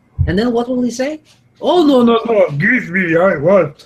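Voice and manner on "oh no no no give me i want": very slow, greedy, dragged-out dragon voice. Imagining what a greedy dragon says when it must give something back, dragon impression. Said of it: "This is a very good dragon impression".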